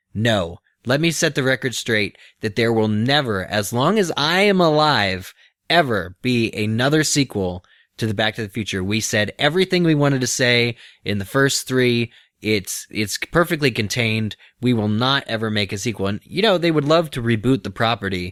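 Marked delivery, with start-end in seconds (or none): none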